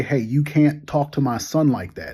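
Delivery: plain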